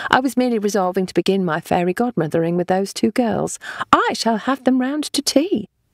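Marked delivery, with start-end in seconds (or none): none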